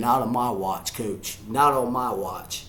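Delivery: ordinary talk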